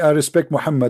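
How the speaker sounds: ordinary delivery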